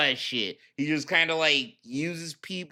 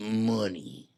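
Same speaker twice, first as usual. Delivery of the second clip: wiseguy mobster-style money with emphasis on o; 7 semitones lower, 4 dB quieter than usual. Describing how Phil says a word, imitating Phil's mobster-style 'money'. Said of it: "He says it like a mobster".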